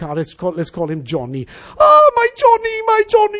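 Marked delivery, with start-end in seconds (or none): 1.8-3.4 frantic, panicked, very high-pitched cry. Retelling a scene in an airport lounge: imitating a panicked mother shouting. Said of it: "she's shouting".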